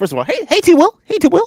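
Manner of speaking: very high-pitched put-on impression voice.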